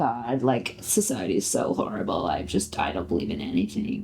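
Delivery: imitated low vocal fry. Talking about vocal fry, a speaker demonstrates how it sounds: imitating vocal fry. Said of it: "The fry's like zoomed out".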